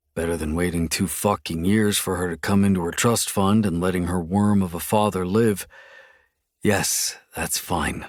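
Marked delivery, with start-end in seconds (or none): 6.7-8.1 breathy, hushed whisper through clenched, gritted teeth. Asked if the marriage terms are fine, the narrator agrees through gritted teeth. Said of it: "I say through gritted teeth".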